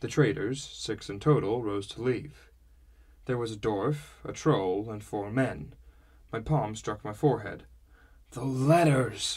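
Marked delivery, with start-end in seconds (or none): 8.3-9.4 groaning, with a groan. The narrator suddenly remembers the letters as the traders rise to leave, groaned. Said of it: "I groaned".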